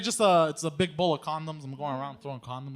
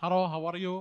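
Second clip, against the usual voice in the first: fake Indian accent, mixed with other foreign accents; 3 semitones higher than usual. Practicing a greeting to tell people: put-on Indian-sounding accent. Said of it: "That sounded like every racist accent mixed into one".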